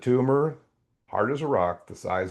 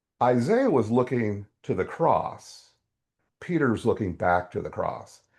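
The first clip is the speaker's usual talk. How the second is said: normal talking voice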